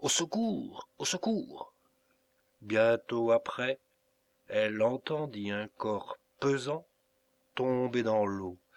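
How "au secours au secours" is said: high, stifled, half-smothered, nearly choked cries. A former servant cries out for help again and again, in a nearly choked voice. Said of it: "s'écria ensuite à plusieurs reprises et d'une voix presque étouffée".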